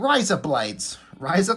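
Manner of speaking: put-on Australian accent. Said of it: "repeating the thing".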